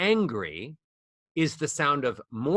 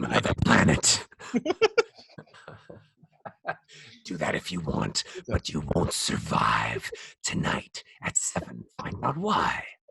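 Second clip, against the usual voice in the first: film trailer narrator announcer delivery; 9 semitones lower than usual. Told they went to it, the speaker slips back into a movie trailer voice. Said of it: "movie trailer voice".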